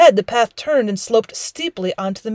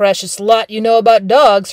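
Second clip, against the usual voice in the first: scornful sneering tone; 3 dB louder than usual. A narrator reads a brother's retort to his sister, sneering. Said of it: "her brother sneered".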